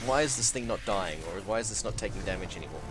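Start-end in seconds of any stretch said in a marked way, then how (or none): none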